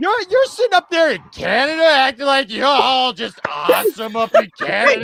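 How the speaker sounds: put-on drunken speech. Scolding Tony in a running bit, put-on drunken speech. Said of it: "He's also doing the drunk impression".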